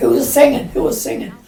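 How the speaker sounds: mock very high, shrill, demanding shout. Retelling a teacher bursting into a noisy class: imitating Garvey shouting. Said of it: "and he shouts".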